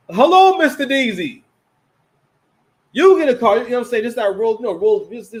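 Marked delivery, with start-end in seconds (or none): 0.1-4.0 loud, raised put-on voice, every word over-enunciated. Greeting someone and giving them a car, in overly articulate Oprah voice. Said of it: "the damn uh uh uh Oprah voice. Like you you like you hear the Oprah voice a lot".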